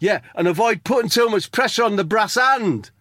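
mock heckle in own voice, yelled very high. Retelling own shout from the bar during a comedy set: retelling own heckle. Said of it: "You did it in your voice".

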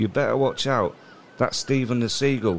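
ordinary talk, nothing marked

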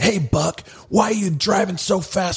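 shrill, very high-pitched screaming yell. Speaker retelling a cop yelling at him at the car window, retelling a cop's scream. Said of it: "he screamed".

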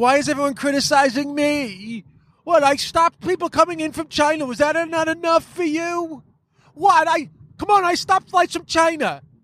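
put-on childish, very high five-year-old voice. Acting out whiny complaints about being criticized: five-year-old child impersonation. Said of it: "That's my fucking five-year-old child impersonation".

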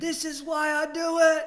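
very high, very loud, drawn-out, stretched scream. Retelling a hard ultramarathon night alone: retelling own screaming. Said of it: "I just started screaming".

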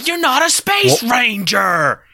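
cowboy voice, high, drawn out and swooping. Asked to do impressions this episode, the speaker tries a Woody impression. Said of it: "doing your best Woody impression".

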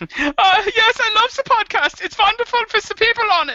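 put-on German accent, pitched way up. Asked to write a podcast review as their german person, in a german person character voice. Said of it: "Can you write one as your German person".

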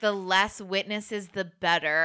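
normal talking voice

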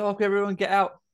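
mock panic, high-pitched and urgent. Retelling a film scene where a character starts panicking: imitating a panicking character. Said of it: "he starts panicking and says".

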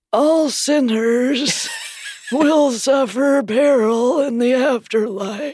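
creepy voice with the pitch lifted. Reading out names, the speaker slips into a Warren Jeffs impression. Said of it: "Did you enjoy my Warren Jeffs impression?".

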